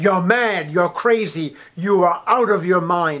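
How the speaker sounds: loud, play-acted, blurted outburst in a great voice. Retelling a scene before three dignitaries, the speaker voices one blurting out: retelling a loud outburst. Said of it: "he blurts out with a great voice".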